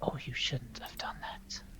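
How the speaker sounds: scowling whispered elf voice.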